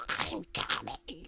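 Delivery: eerie, soft, breathy, barely voiced whisper. Telling a creepy story, the character says his last words: whispering. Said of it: "He then whispers".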